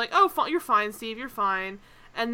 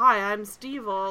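regular everyday voice with plainly creepy edge. Imitating a director's voice from a film's making-of: normal but creepy voice. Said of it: "very normally creepy voice".

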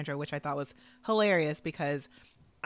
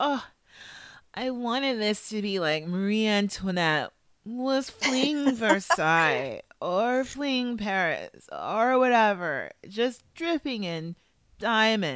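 mocking put-on voice, higher and louder; 5 semitones higher, 5 dB louder than usual. Retelling a contestant's dress description: mocking imitation of Kate. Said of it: "I just can't stand the way she talks".

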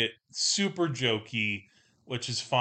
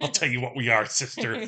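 put-on mean villain voice. Quoting an actor playing a villain who is acting all mean: imitating an actor's mean voice. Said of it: "He does this kind of voice".

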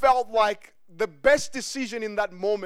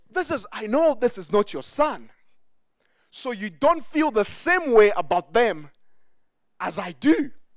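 mock enraged, hot-tempered, extremely angry. Acting out Abraham in a discussion with Sarah: Abraham extremely angry. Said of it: "he was extremely angry".

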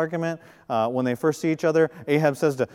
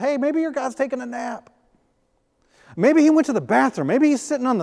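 put-on sarcasm, much higher; 9 semitones higher than usual. Retelling Elijah taunting Baal's prophets, mock-sarcastic as Elijah. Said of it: "Elijah's real sarcastic".

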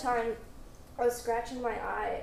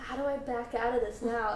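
plain

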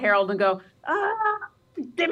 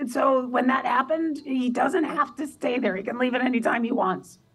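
loud stage whisper, higher pitch; 3 semitones higher than usual. Talking about him so he won't overhear, in a stage whisper. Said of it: "And I am stage whispering".

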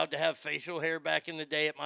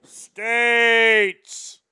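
very loud, high, booming shout; 6 semitones higher, 14 dB louder than usual. Retelling a man calling you from across the cafeteria, Mr. Van Horn's big booming call. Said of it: "He had a big booming voice".

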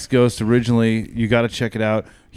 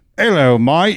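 fake Cockney accent, higher and louder; 5 semitones higher, 4 dB louder than usual.

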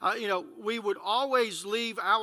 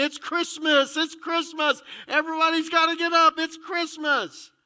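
put-on high, excited child's scream; 7 semitones higher, 6 dB louder than usual. Retelling running down the hallway on christmas morning: retelling own childhood screaming. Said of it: "go running down the hallway screaming".

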